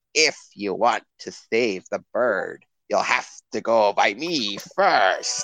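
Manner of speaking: badly acted put-on goblin voice. Describing a game's awful voice acting, the speaker imitates a goblin. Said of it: "this goblin comes by and he's like".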